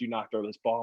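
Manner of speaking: play-acted, dead serious, angry tone. Retelling the intern lift coach's warning: imitating a dead serious coach. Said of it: "dead serious".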